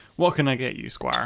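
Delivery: put-on character voice, smiling and grinning. Voicing a bartender who smiles broadly at a player: bartender character voice, smiling. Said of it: "smiles broadly at you, saying".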